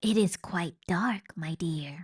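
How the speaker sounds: soft, hushed whisper. Reading a character's reply from inside her pocket in the dark, whispering. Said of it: "whispered Roscuro from her pocket".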